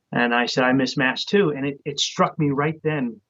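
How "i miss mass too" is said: plain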